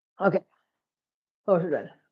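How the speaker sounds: heavy breathing while talking. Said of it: "sorry about the heavy breathing in the microphone".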